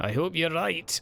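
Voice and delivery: accent blending Scottish and Welsh. Answering a friend's voice-acting tips, in a weird Scottish-Welsh hybrid accent. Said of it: "I can't place that bloody accent".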